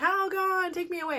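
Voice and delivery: play-acted, high-pitched yell. Retelling a bath commercial where a mom in chaos yells: imitating a yell. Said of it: "and she'd yell".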